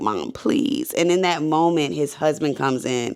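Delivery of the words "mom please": sobbing, crying, pleading through tears. Retelling a show scene where a son begs his mom: imitating someone sobbing. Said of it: "he's just sobbing to her and crying like".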